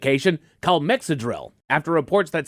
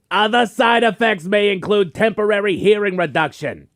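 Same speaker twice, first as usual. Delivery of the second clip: high-pitched yelling, every word shouted; 5 semitones higher, 3 dB louder than usual. Repeating a warning to someone who says he can't hear, yelling. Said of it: "why are you yelling".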